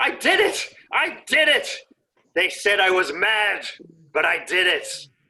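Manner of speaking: high, elated, jubilant cry of triumph. Game master voicing an unseen man in a crowd, elated victory scream. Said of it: "by an elated scream of victory".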